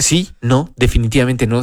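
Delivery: plain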